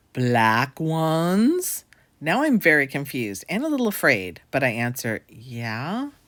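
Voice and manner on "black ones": put-on heavy, laid-on German accent, drawn-out "ones". Retelling what a man asked the speaker, in a thick German accent. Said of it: "said in a thick German accent".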